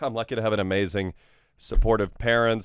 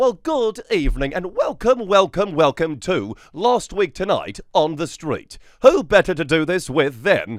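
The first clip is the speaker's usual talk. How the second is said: eager, raised, high-pitched, belted late-night host voice; 8 semitones higher, 6 dB louder than usual. Retelling how you put on your glasses and performed for John, do a John Oliver impression. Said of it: "you did an impression of him?".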